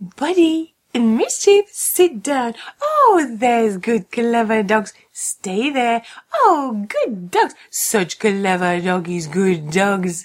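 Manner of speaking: goofy, silly doggy voice. Settling two dogs during a radio news segment, the speaker uses a silly voice. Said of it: "did you have to use that silly voice".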